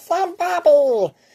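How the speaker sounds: put-on very high, squeaky cartoon kid voice. Giving backstory on a cartoon, the speaker shows how Bobby talks: Bobby voice. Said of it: "and I talk like this".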